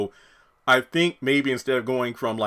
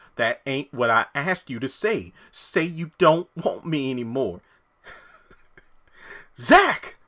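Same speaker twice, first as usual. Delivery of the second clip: put-on country accent, slower; 3 semitones higher than usual. In an acted scene, telling Zach what he should say; country accent. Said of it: "based off the country accent".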